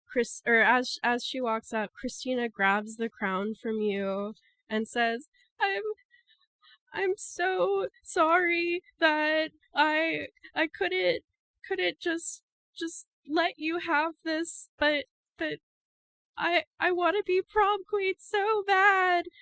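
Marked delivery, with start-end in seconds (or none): 5.6-19.2 weeping, pitched-up sobbing, stumbling over repeated words. Voicing a character who walks up to the stage, sobbing while talking. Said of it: "Christina is sobbing".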